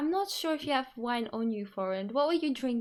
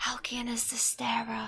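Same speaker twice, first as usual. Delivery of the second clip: whispering. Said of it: "I whisper to Astoria".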